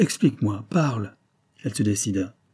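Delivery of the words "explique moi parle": supplicating, pleading, begging tone. A man presses the hesitating woman for an explanation, pleading. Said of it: "demanda-t-il d'un ton suppliant".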